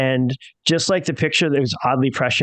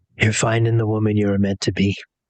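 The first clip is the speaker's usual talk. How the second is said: hushed, whispered voice; 5 semitones lower than usual. Morganeth pulls you close before you leave, whispering. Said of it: "she whispers to you".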